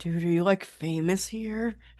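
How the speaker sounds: whispered aside. Leaning over to another character in a crowd: whispering. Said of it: "whisper to Papa Fred".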